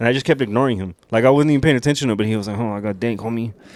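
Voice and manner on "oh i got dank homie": put-on street hooligan voice with Spanish accent. Retelling a guy offering weed on the strip: imitating a spanish accent. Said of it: "a Spanish accent and shit".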